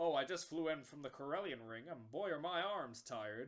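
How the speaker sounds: bad, terrible, put-on American accent. Retelling an event, the speaker quotes a man in rebel fighter uniform in a terrible American accent. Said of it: "he's got a terrible American accent on it".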